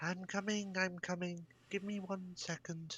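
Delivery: very high-pitched calling voice, sounding distant. Narrating a scene, voicing someone inside after a knock, quite high pitched. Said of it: "quite high pitched".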